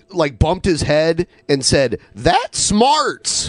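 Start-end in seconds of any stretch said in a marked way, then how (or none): 2.2-3.5 put-on old-timey cowboy dialect, pitched up. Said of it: "he speaks like a cowboy dialect".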